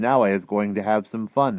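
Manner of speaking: plain reading voice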